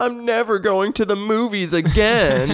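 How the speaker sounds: very high, slow, tearful, earnest sobbing. Retelling a movie scene, quoting a kid once safe, imitating a kid sobbing. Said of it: "but like sobbing".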